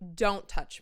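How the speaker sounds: stern, no-nonsense, loud, firm voice. Retelling telling a coworker on set not to touch them: loud firm reenacted warning. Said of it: "maybe I should move the mic away from me if I reenact this".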